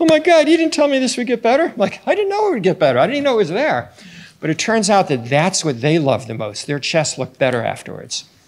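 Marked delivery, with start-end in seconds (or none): 0.0-1.6 mock, very high, crying in tearful disbelief. Retelling two girls in the recovery room, imitating girls crying. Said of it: "two girls in the recovery room crying".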